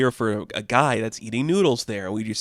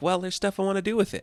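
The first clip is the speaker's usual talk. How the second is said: put-on high, quick kid voice. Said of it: "He's like".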